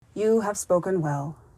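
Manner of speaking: ordinary delivery, nothing marked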